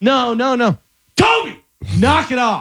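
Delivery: high, firm, no-nonsense scolding. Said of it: "This is what that would have done".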